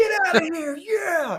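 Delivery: mock, very high, elated, triumphant freaking out. Speaker re-enacts landing on the platform as the crowd went crazy, retelling freaking out. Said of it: "And I'm like freaking out".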